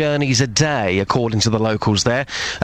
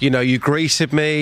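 normal talking voice

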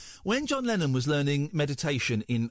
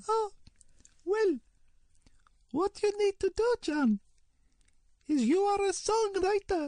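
put-on guru voice, higher pitch. Retelling advice given about songwriting: Maharishi impression. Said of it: "I'm gonna try a Maharishi impersonation".

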